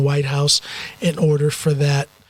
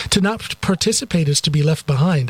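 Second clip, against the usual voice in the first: plain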